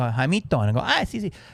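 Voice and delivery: put-on imitated Mexican accent. The speaker acts out what he says in his bit, in a put-on Mexican accent. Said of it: "I can only do Mexicans".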